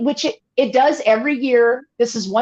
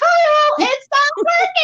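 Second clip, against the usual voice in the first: very high, loud yell. Speaker acts out herself in front of her tv, imitating yelling at the tv. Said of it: "I'm yelling at the TV like".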